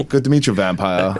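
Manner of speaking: clumsy, bad put-on British accent. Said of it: "I'm trying to do a British accent".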